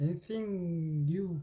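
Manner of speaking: slow model voice, stressing and drawing out anything new.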